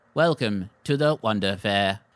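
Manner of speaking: mechanical metal robot voice, like a brass automaton. Voicing a metal automaton greeting a visitor: brass automaton voice. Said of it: "One of them looks at you, steps in front of the others, and goes".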